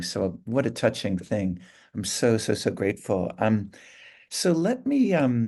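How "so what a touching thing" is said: plain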